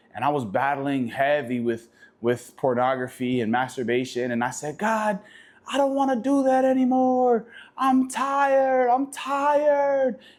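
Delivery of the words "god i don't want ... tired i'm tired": put-on very high screaming cry, tired and drawn out. Retelling praying aloud in an empty house: retelling a scream. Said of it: "I'm screaming at the top of my lungs".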